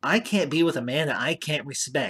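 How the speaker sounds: very whiny, irritating voice. Retelling a movie line from an airport hallway scene: imitating Elaine's whiny voice. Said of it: "she says it very whiny and very irritatingly".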